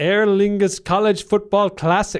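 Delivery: bad, terrible put-on Irish accent, loud. A speaker discussing Saturday's game in Dublin, in a terrible Irish accent. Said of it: "That's a terrible Irish accent".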